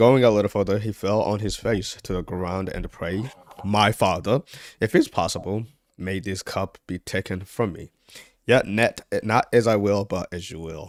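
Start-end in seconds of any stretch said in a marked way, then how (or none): none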